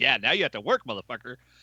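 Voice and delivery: mock gloating, theatrical voice. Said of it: "Robert Downey Junior laughed his ass off".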